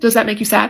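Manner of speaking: imitated deadpan, flat emotionless delivery. Retelling a child's question to his father: imitating a deadpan question. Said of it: "again, no emotion".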